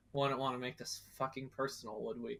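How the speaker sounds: quiet, grumbled, defeated mutter. Retelling how Ariana concedes defeat, muttering to herself as Ariana. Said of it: "and just mutters to herself".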